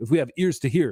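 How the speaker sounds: plain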